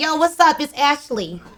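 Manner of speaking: attempted New York accent. Speaker acts out how someone greets Ashley, put-on New York accent. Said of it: "Can I hit a New York accent?".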